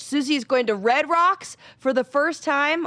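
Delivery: thrilled, loud, high, excited shouting. Talking about going to a concert with susie, yelling excitedly. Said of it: "Oh my God, I'm yelling".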